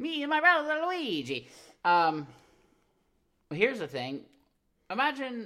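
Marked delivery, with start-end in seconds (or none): 0.0-1.5 put-on strong Italian accent with pitch way up. Joking about an old game advertisement, doing a Mario impression with strong Italian accent. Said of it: "they're doing really Italian strong".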